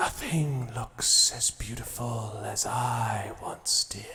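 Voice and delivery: eerie, spectral ghost voice. Voicing an unseen figure speaking from behind the players: ghost's voice. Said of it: "this voice behind you says".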